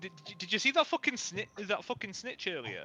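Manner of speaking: put-on slightly drunk voice. Playing a character who has drunk almost a full pint of rum: acting tipsy. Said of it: "I'm very obviously a little bit tipsy".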